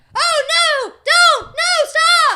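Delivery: very high, very slow, drawn-out holler. Showing how hollering differs from screaming: hollering words. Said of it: "That's hollering".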